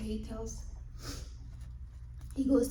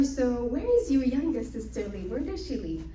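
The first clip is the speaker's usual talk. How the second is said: plain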